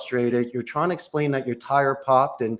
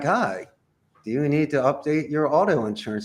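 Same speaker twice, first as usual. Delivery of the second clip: canned, recorded, automated sales-call voice. Describing picking up a robocall: imitating a robocall voice. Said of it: "you pick up the phone and like".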